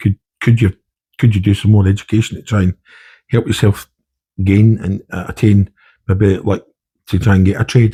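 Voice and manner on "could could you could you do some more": usual speaking voice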